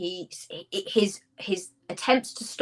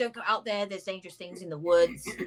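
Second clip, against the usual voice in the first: ordinary delivery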